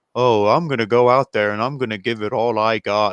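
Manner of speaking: dead level, flat, emotionless monotone delivery. Mocking a wrestler's promo delivery: imitating Jungle Boy's emotionless promo. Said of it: "Jungle Boy has no emotion in his voice".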